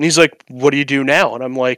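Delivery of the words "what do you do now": ordinary delivery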